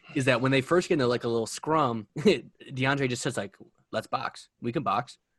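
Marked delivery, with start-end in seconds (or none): 4.0-5.2 laid-back, offhand, casual tone, low and soft. Act out a training camp scrum challenge, as DeAndre in a casual low tone. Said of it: "like just like low tone voice ever".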